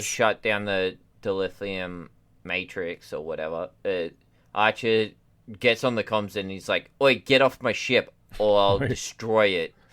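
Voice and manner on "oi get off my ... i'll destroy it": put-on loud, called-out Australian accent. Quoting Archer on the comms ordering others off his ship: Archer voice with Australian accent. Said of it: "Archer has an Australian accent".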